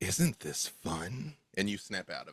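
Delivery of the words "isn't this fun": huge serpent character voice. Voicing a giant snake wearing mascara: voicing a giant snake. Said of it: "and it says".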